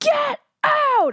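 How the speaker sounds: very high, loud scream. Retelling charging at a man near a parking garage gate, retelling a scream. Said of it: "And I'm just screaming and I'm like".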